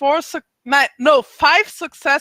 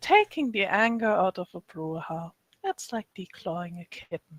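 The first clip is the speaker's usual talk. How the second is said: speaking in a whisper, lower and quieter; 7 semitones lower, 10 dB quieter than usual. Voicing a character who whispers a remark at the table: whispering. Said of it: "I'm actually whispering something".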